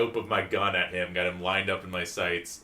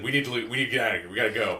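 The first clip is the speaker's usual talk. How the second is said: put-on panicked voice; 3 semitones higher than usual. Retelling a character's urgent call to leave: imitating Dick panicking. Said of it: "Dick panicked and said".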